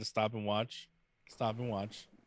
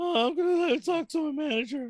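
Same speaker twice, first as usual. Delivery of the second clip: put-on teenager voice, higher and louder; 8 dB louder than usual. Quoting a movie character who must get a job: sounding like a Simpsons teenager. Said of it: "He sounds like the teenagers from The Simpsons".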